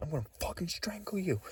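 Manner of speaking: very high-pitched, shrieking scream. Retelling a man heard arguing with a woman: imitating a man screaming. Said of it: "He kept screaming".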